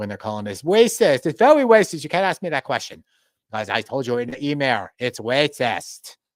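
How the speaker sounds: put-on very loud, blaring, not-so-great Chinese accent. Acting out Vincent Ke's response to Globalist News asking about election help, in a not so great Chinese accent. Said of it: "with my my not so great Chinese accent".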